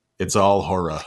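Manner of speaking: imitated Texas accent. Recalling a first conversation, quoting Bob Passarella in his Texas accent. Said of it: "in his Texas accent".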